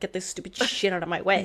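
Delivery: play-acted, full-blown furious, frustrated, angry outburst. Retelling a tantrum over an empty recording file: imitating own angry tantrum. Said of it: "And I was so mad about it".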